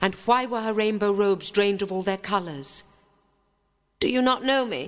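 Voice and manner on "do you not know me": insistent, commanding, demanding tone, high pitch. Narrator reads an ancient fairy arriving at a royal christening, demanding. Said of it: "demanded the ancient fairy".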